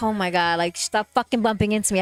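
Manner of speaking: put-on irritated, snapping outburst. Retelling being bumped in a crowd: imitating own irritated outburst. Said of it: "I'm getting irritated".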